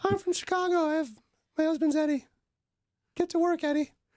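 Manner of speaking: squeaky, very high-pitched put-on voice. Doing an impression of Lauren after being asked: imitating Lauren. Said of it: "should I do my best, Lauren?".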